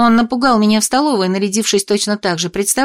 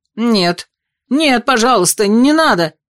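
startled cry, then slow, scared, frightened. Narrator voices a young man backing away on seeing the narrator, frightened cry. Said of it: "парень испуганно вскрикнул".

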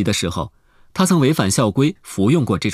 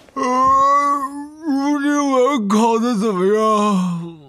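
spoken mid-yawn. A student asks a classmate climbing in how the exam went, yawning. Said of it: "打着哈欠伸着懒腰问".

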